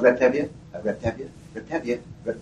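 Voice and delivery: ordinary talk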